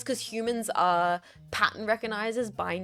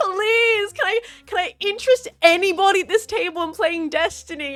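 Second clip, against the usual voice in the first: acted-out loose, tipsy voice, raised and pitched up; 11 semitones higher, 9 dB louder than usual. Retelling what a tipsy destiny promoter asked at a table: imitating a tipsy woman. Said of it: "she was so tipsy".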